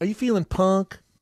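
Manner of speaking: put-on obvious Southern accent. Quoting a woman from Houston, imitating a Southern accent. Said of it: "She had a very, obviously, Southern accent".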